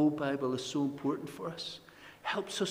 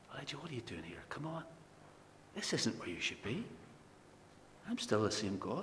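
soft, low, close half-whisper, not breathy; 3 semitones lower, 10 dB quieter than usual. Retelling the Lord speaking to Elijah at the cave: half-whispering as the Lord. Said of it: "in a whisper now".

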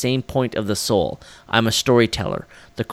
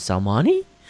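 questioning rise in pitch on Salmani. Telling the story behind a film, with a question rise on Salmani. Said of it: "I'm always going to say that as a question".

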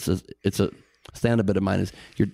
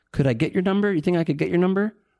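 put-on very high, hesitant, unconfident voice; 10 semitones higher than usual. Showing how he used to ask a girl for her number: mock-unconfident asking. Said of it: "you're saying it in an unconfident way".

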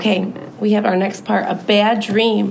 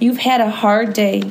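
ordinary delivery

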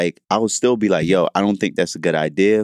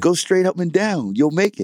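put-on yelling, higher; 11 semitones higher than usual. Retelling a friend's mid-game advice on a missed shot: imitating a friend yelling. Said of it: "yelled at me".

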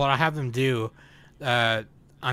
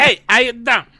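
put-on Italian accent, higher and louder; 11 semitones higher, 11 dB louder than usual. Imitating how someone greets people: imitating Danny's Italian how-you-doing. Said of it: "that's what Danny sounds like when she tells people how".

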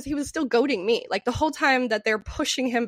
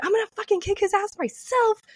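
put-on, high, enraged, furious scream; 8 semitones higher than usual. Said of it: "screaming this as I'm full running".

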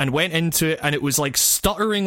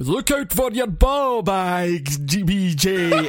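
slow, exaggerated, hammy Scottish accent. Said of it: "that's an English guy doing a Scottish accent".

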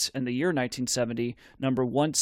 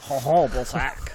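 put-on French-accented pronunciation. Saying the name again after being asked: french accent. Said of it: "Except in a French accent".

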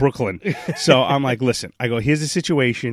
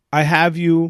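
ungrammatical, non-native English delivery; 3 semitones higher than usual. Retelling what the man who gave them their room rate said, imitating broken english. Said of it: "he's got very broken English".

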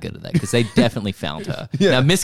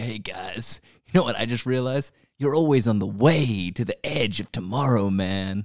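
put-on stoner voice, quieter; 4 dB quieter than usual. Mocking another speaker's phrase as if said in a stoner circle: imitating a stoner. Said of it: "in a stoner circle and you're just like".

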